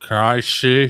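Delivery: mumbling through a cracked voice. Game master voicing a man missing most of his tongue: dry, cracked mumbling voice. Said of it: "he's got a very like dry, cracked voice... mumbles to you".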